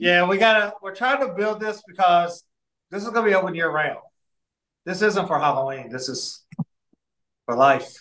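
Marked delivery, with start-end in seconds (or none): 4.8-8.0 slightly resigned, deflated, a little defeated. Explaining that what they are building is open year round, a little bit defeated. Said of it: "a little bit defeated in your voice".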